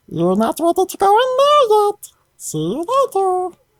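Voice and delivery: very high, swooping, sing-song, adorable little voice. Describing a voice players hear near an ominous cave; adorable voice. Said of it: "you hear an adorable voice".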